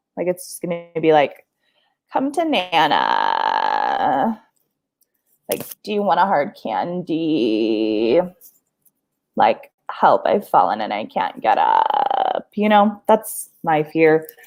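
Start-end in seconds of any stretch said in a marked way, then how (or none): 2.1-12.4 very low, slow, drawn-out crackly vocal fry. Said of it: "deep, crackly [name] voice".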